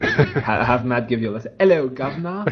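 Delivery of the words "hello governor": fake British accent, pitched a bit high. Lesson in sounding like you're from far away: fake British accent. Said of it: "like a fake British accent".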